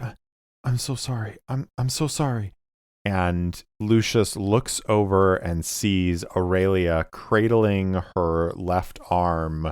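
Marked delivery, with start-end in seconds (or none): 0.0-2.5 high, tearful, halting speech through sobs. Voicing a character on her knees, apologizing: weeping while apologizing. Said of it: "sort of weeping and just apologizing".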